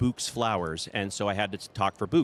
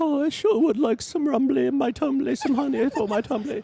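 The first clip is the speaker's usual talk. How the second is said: very high, loud bear voice; 5 dB louder than usual. Recalling reading stories to his kids and doing the voices: Winnie the Pooh voice. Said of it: "you're doing Winnie the Pooh".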